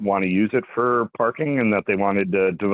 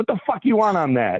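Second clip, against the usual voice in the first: put-on yell, higher pitched; 11 semitones higher than usual. Retelling a hot dog place where staff yelled at customers: imitating a yelling hot dog server. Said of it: "why are you yelling at me?".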